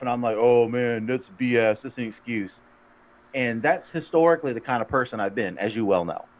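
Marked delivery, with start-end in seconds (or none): 0.4-2.5 gruff, scoffing, dismissive tone. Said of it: "I'm always kinda gruff".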